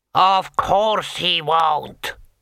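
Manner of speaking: big, expansive, loud booming voice. A voice behind Rincewind answers his squeak, booming expansive voice. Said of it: "boomed an expansive voice".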